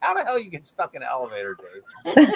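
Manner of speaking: fast, laughing mock scolding.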